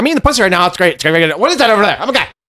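high, scatterbrained chatter, losing track mid-line. Acting out a distracted squirrel-like figure: Joe Pesci impression. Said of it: "naked Joe Pesci".

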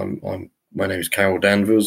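normal talking voice

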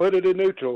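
mock, high-pitched shouting. Speaker retells yelling at the man towing their home away, retelling a yell. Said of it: "while I'm yelling at him".

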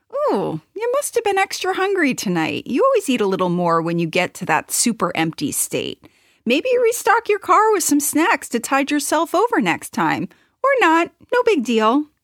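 reassuring, supportive, encouraging tone. Speaker demonstrates what their inner supporter voice can now say, supportive inner voice. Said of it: "My supporter voice can now say".

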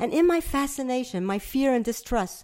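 ordinary delivery

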